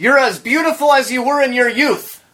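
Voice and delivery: mocking, high outburst dripping with sarcasm. A character with sarcastic Tourette's blurts out a compliment: sarcastic outburst. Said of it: "I have sarcastic Tourette's".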